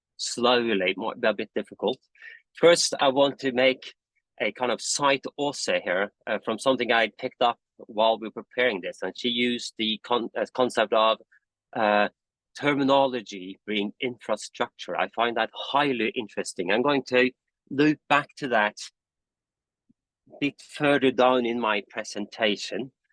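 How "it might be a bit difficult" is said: fast, rushed, over-caffeinated rattled-off speech. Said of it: "I had a bit much coffee today".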